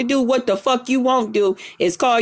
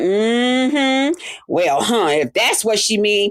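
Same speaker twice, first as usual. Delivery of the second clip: unhurried, slow, agreeable tone, mm-hmm drawn out; 3 semitones lower than usual. Retelling how another person reacted while others lied about the speaker: imitating Lolo. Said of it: "sitting there going".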